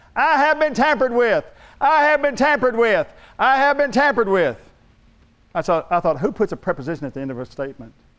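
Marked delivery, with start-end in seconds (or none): 0.2-4.6 tinny, shrill, very high repeated shouting. Recounting a noise heard while driving onto the parking lot, imitating a tinny voice yelling. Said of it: "a real tinny sounding voice yelling out".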